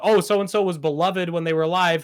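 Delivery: ordinary delivery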